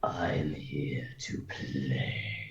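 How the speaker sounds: slow, harsh, terrible raspy mummy voice. Narrating a game scene, the speaker voices a mummified creature in a raspy, terrible voice. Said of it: "in a raspy, terrible voice".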